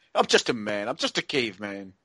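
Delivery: put-on smug voice. Showing how a game line should have sounded: smug Phil Hartman impression. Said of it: "should have been said with, with a lot of smugness. I'm thinking of Phil Hartman".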